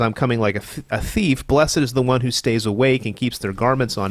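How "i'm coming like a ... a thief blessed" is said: usual speaking voice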